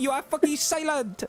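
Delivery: shrill, very high, frustrated yelled outburst. Retelling what a player said during a game: imitating someone shouting. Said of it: "shouting at them".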